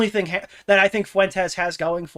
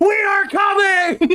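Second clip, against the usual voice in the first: mock all-out yelled scream, very high and shrill; 13 semitones higher, 5 dB louder than usual. Describing a clip to stitch together, imitating someone screaming. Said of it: "the Pikering screams".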